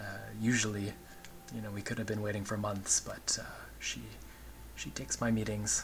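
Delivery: hushed, muttered under the breath, partly whispered.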